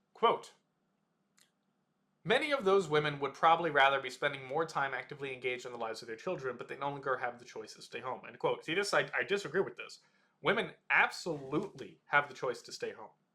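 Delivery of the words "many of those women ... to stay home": usual speaking voice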